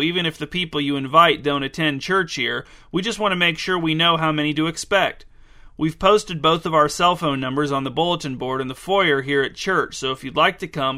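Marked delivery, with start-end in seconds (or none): none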